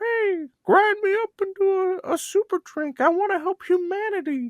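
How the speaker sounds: tiny, very high-pitched little voice. Asked where they find mushrooms, the guest voices one, in a little mushroom voice. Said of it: "I'll hear a little voice says".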